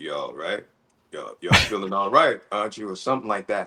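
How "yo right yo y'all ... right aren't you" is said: dropped, deep relaxed voice. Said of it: "he said in a deep voice".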